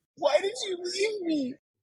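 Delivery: mock, very high, weepy, tearful crying voice. Retelling what she said when she walked in: imitating someone crying. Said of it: "and she starts crying".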